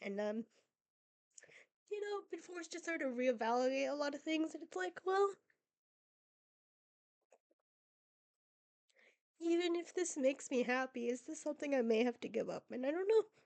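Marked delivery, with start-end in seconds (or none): 2.3-13.2 speaking through tears, crying. Opening up about not doing well mentally: crying while talking. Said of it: "I didn't think I would start crying".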